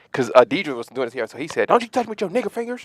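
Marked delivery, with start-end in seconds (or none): 1.6-2.8 very high put-on man's voice. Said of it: "He's still doing the voice".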